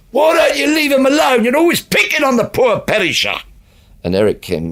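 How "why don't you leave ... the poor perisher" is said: put-on very high, loud yell. Retelling a line yelled from the auditorium at an arguing couple: retelling a yell. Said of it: "I had to yell out".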